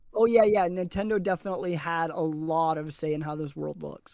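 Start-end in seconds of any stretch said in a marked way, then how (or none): none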